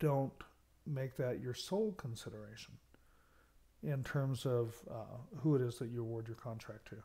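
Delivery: normal talking voice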